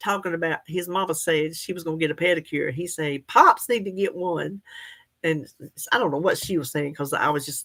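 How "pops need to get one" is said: strong, put-on country-boy accent. Retelling what a little boy said in a video: imitating a country boy's accent. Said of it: "He was so country".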